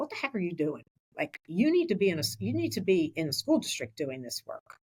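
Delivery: ordinary delivery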